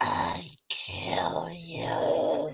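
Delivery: slow, deep, low whisper. Recounting a favorite comedy bit, quoting the puppet's line, slow deep low voice. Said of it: "very slowly in a deep low voice he goes".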